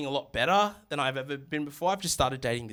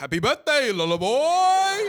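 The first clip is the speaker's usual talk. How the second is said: very high, drawn-out put-on Sri Lankan accent, boy; 12 semitones higher, 7 dB louder than usual. Retelling the dad's birthday phone call, imitating dad in Sri Lankan accent. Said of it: "a butt-dialed Sri Lankan Yogi Bear".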